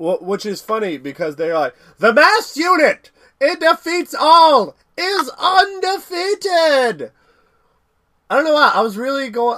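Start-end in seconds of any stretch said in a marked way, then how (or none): 2.0-7.1 put-on very high, very slow, drawn-out old-time newsreel announcer. Imitating how they describe it, in a 1930s-1940s reporter voice. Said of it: "trying to go for like a 1930s, 1940s reporter".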